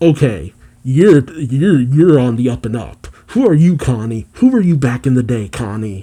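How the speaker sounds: plain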